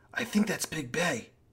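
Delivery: quiet, soft, hushed half-whisper. Retelling what two preteens said as the speaker walked past: imitating a half-whisper.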